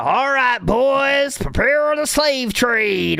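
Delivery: put-on slow, high-pitched Southern drawl, "boys" drawn out. Making a joke during a discussion, slipping into a Colonel Sanders Southern accent. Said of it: "Why did the Southern voice come out".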